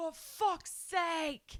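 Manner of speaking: put-on man's scream, pitched way up high. Retelling what a man in the street screamed: imitating a man screaming. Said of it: "screams in the street".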